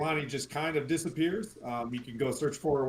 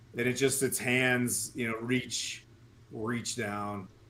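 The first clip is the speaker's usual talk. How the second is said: ordinary delivery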